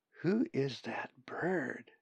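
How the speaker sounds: very quiet, hushed, under the breath. Narrator reads Colin turning to Zack to ask about a bird, very quietly. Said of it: "very quietly".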